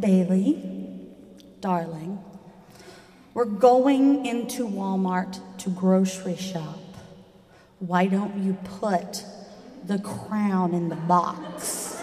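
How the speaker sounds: mock very patient, slow, spelling-it-out tone. Retelling what was said to a daughter, in a put-on very patient explaining voice. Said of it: "in this very patient voice, like you're trying to explain the most simplest thing".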